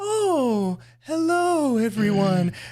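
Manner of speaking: high, floaty, dreamy faraway voice, oh drawn out. Describing how a character sounds in the audiobook, imitating her on-a-cloud voice. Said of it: "She sounds like she's like".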